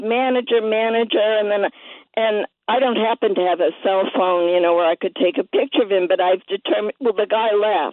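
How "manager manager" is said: normal talking voice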